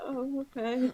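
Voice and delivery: a bit sad and downcast. In a role-play scene, the character pulls a hand away after an apology; a little sad. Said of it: "take my hand away a little bit sadly".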